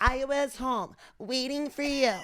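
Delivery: sweet, high, slow voice with slight rasp. Imitating Sammy Sweetheart from a reality show: Sammy Sweetheart voice. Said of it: "she has a sweet voice with a little rasp".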